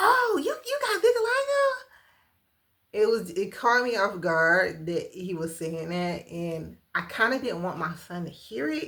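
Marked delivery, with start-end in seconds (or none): 0.0-1.7 put-on excited voice, much higher. Retelling what someone said at the checkout, imitating an excited voice. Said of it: "in this very exciting way".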